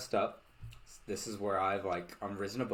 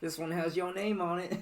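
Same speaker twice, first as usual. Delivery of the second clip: very high, schmoozy, smooth-talking newsie paperboy patter; 9 semitones higher than usual. Acting out selling papers as a newsie: schmoozy newsie voice. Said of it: "the schmoozy pizzazz of, like".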